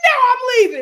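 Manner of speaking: shrill, very high, full-volume screaming outburst. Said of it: "he starts screaming".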